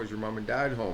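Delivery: ordinary delivery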